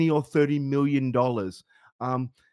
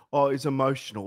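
ordinary talk, nothing marked

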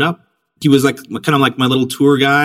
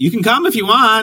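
mock very high, playful, joking throwaway tone; 10 semitones higher than usual. At the airport before her flight, inviting him along, retelling a joking invitation. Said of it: "kind of jokingly".

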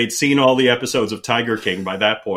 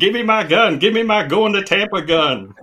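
put-on screaming rant, very high-pitched; 9 semitones higher than usual. Describe your plan to go as him for Halloween 2020, screaming as Joe Exotic. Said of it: "keep screaming".

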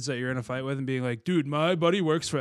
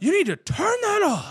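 very high, loud yell; 5 dB louder than usual. Recalling his mom yelling up the stairs at him as a teen, retelling mom yelling upstairs. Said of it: "My mom yells up the stairs".

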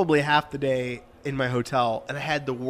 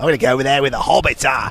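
loud, throaty, bad dwarven pirate accent; 5 dB louder than usual. Repeating a line in a put-on accent for the other speaker, throaty. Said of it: "it's so like throaty".

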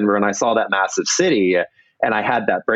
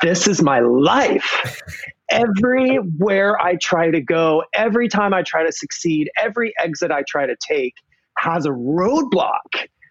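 mock scream, high and drawn out; 7 semitones higher than usual. Recalling sitting down in a parking lot after stopping the car; retelling screaming.

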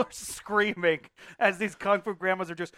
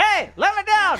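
gnome voice, higher and louder; 13 semitones higher, 5 dB louder than usual. Voicing a grabbed gnome that begs to be let down: gnome voice. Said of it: "a gnome goes falling back and lands at your feet".

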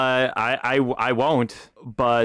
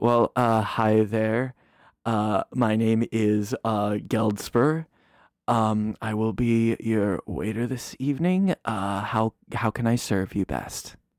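hesitant, fumbling, polite waiter voice; 2 semitones lower than usual. Voicing a Dragonborn waiter greeting the table: Geldspur the Dragonborn waiter voice. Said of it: "A different Dragonborn goes".

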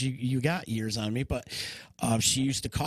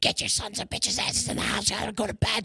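put-on grandma voice, high, scolding, yelling; 8 semitones higher than usual. Retelling how Grandma ordered them inside after an explosion: imitating Grandma screaming. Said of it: "She starts screaming at us".

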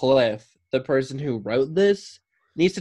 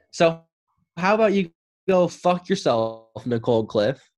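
fed-up venting, slow, heated, angry outburst; 3 semitones higher than usual. Reacting to an advice letter writer named Nicole: getting heated. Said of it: "I'm getting heated at this person".

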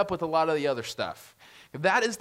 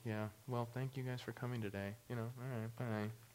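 super monotone, dead-level droning delivery; 5 semitones lower, 16 dB quieter than usual. Telling listeners to hear how it sounds, super monotone. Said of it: "just listen to me as I say it. And then just super monotone".

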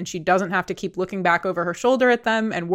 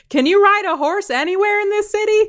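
put-on very high, thrilled, excited screaming shout; 14 semitones higher, 5 dB louder than usual. Retelling what a stranger screamed from an intersection, retelling a stranger's scream. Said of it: "they just started screaming".

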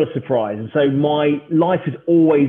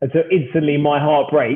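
ordinary talk

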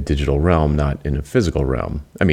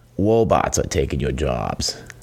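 cartoon r-to-w in robots, sing-song swoops. Announcing this week's topic: Elmer Fudd voice. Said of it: "Is anybody old enough to remember Elmer Fudd?".

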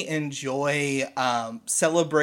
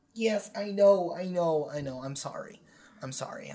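flustered, apologetic, quieter voice; 5 dB quieter than usual. A character apologizes while trying to help someone fall in love: flustered. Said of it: "I'm just so flustered".

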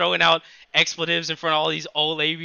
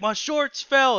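high, pitched-up, attempted yell; 9 semitones higher than usual. Retelling what a man told the lifeguard: imitating a man trying to yell. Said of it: "he's trying to yell".

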